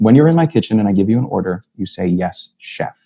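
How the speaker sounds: gentle but stern voice. Retelling a chef's command to a new cook: imitating a gentle but stern order. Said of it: "very gently, but very sternly says".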